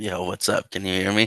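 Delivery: voice like a heavy smoker. Greeting the host on joining the show, voice like a heavy smoker. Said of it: "why do you sound like you, you just smoked, like, three packs of cigarettes?".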